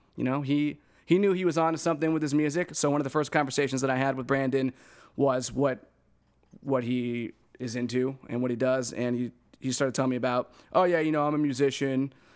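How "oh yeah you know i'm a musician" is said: mocking, put-on douchey voice. Retelling what Brandon said in their first conversation, imitating Brandon as douchey. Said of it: "make me sound like a douche with that voice".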